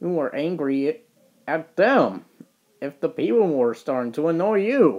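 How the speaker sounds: plain reading voice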